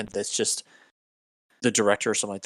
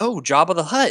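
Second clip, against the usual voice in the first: high, loud, mock excited, eager tone. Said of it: "it's, uh".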